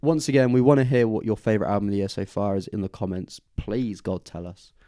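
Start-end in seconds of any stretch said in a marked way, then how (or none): 3.6-4.7 sarcastic-sounding plea, quieter and slower. Host asks viewers to share their favourite album, a sarcastic-sounding plea. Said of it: "That sounded sarcastic".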